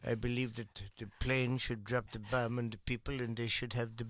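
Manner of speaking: put-on German-sounding accent. You are performing for others who keep guessing whose accent it is, in an Oppenheimer accent. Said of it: "What's that accent?".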